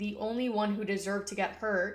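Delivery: ordinary talk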